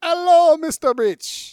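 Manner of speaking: put-on belted high with a Spanish accent. Doing a quick impression of the Fantasy Island host: Ricardo Montalban impression. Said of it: "do the little Spanish accent".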